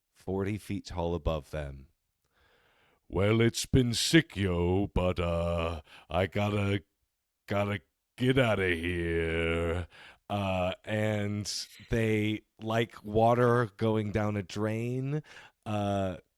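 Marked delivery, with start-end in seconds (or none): 3.1-9.9 voice of a towering, giant being. Forty-foot beings speak down to the young witches who summoned them, booming. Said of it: "in their booming voice".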